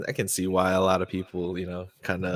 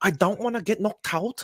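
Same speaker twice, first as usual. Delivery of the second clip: put-on Scouse accent, pitched higher; 13 semitones higher than usual. Imitating a UFC fighter who was just named: Paddy Pimblett impression. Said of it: "Paddy Pimblett. He's a U F C fighter".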